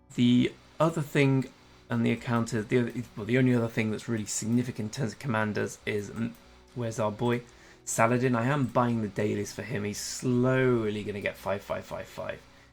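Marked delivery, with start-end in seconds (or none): 10.0-11.0 emphasizing "slowly". Explaining a commander's slow upgrade plan: stress on slowly. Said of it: "Emphasis on slowly".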